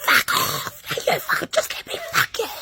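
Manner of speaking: angry, heated whisper-arguing. Picturing the story's argument, acting it out: imitating a whispered argument. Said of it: "we were whispering, arguing".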